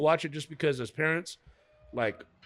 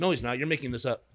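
ordinary talk

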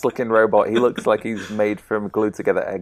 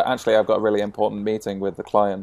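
ordinary talk

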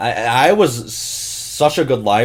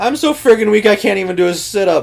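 high, loud, goofy, funny-stupid self-mocking voice; 9 semitones higher, 5 dB louder than usual. Recounting the joke that earned them a detention: retold self-mocking joke. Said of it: "funny stupid to myself".

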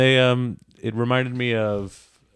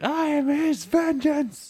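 very high, slow, drawn-out scream. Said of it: "he's just screaming like".

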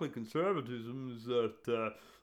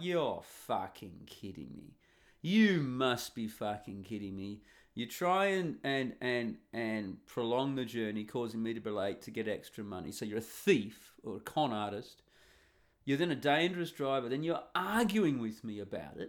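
usual speaking voice

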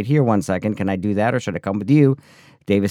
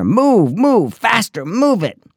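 acted, very high, shrill, slow, drawn-out scream; 12 semitones higher, 5 dB louder than usual. Retelling how the director in a clown costume screamed at the speaker: imitating someone screaming. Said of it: "he screamed in my ear".

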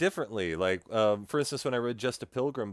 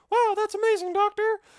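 put-on girl voice, much higher and louder; 5 dB louder than usual. Showing the girl voice he uses when reading books: girl voice. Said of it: "I do have a girl voice".

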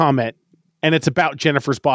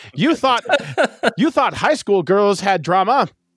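put-on old-fashioned, old-timey voice; 6 semitones higher than usual. Describing the film Jennifer's Body, in an old-timey voice. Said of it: "I'm going to keep with my old-timey voice".

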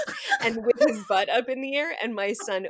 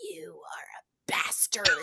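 put-on whispered, hushed, husky small-child voice; 7 semitones higher, 5 dB quieter than usual. Retelling what a small child said: imitating a child's husky voice. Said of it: "he's got a really husky voice".

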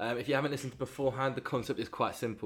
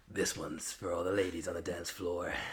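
low, creepy DJ voice on the mic; 5 semitones lower, 3 dB quieter than usual. Opening this week's scene, in a creepy dj voice. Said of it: "Creepy DJ voice".

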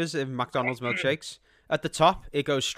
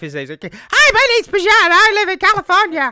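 shrill, drawn-out, very high helium squeak; 10 dB louder than usual. Speaker mocks how Bajan really sounds, squeaky helium-voice Bajan impression. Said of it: "when people suck on helium".

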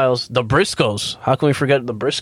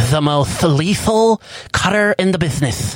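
heavy lisp on s sounds, higher; 6 semitones higher than usual. Quoting Cody Rhodes on a wrestling show, Cody Rhodes voice with lisp. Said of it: "extra emphasis on the lisp".

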